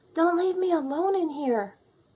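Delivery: tiny little voice, pitched very high. Narrator reading a voice calling from a dark closet, in a quiet little voice. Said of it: "said a quiet little voice from the darkness".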